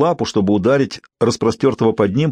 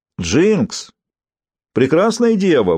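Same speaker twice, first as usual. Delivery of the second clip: puzzled, bewildered calling out, voice pitched up; 6 semitones higher than usual. Riven calls out to Jinx and the maiden, bewildered. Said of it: "в голосе Ривена слышалось недоумение".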